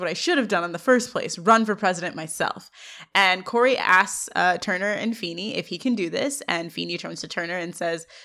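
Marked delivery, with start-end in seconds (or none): none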